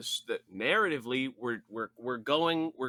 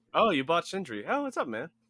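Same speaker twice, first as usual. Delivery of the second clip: casual, friendly, slightly higher-pitched tone; 6 semitones higher, 3 dB louder than usual. Imagining a giant serpent chatting casually: Jormungandr in a casual normal voice. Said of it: "imagine Jormungandr from God of War being like".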